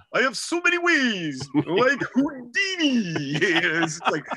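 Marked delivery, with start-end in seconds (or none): 0.2-3.4 put-on New Jersey accent, very drawn out and slow. Retelling Sid Sludge's reply to a question, in his New Jersey accent. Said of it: "he has this accent. He's from New Jersey".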